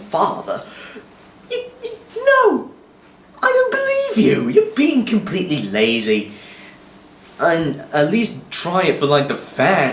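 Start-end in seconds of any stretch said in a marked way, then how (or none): 0.0-4.5 very high, very posh put-on villain voice. A speaker describing a comic-adaptation villain imitates him, very posh villain voice. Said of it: "he's very posh voice like this".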